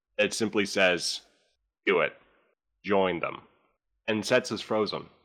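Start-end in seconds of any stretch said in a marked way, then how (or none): 1.9-3.5 menacing, ominous, sinister and dark voice. Narrating a mysterious voice a character hears, sinister, dark voice. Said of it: "somewhat sinister and dark voice".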